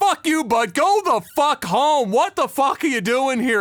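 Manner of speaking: furious, angry yelling, slow and drawn out. Retelling a man on his balcony shouting at the crowd below, retelling an angry yell. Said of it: "He just comes out and he just says".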